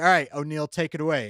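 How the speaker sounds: confident, commanding voice. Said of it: "He's using commanding voice".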